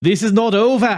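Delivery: loud, slow put-on Italian accent, words spaced out. Quoting what Laura Di Matteo says with the mic on stage, in a put-on Italian accent. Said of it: "this is my Italian accent".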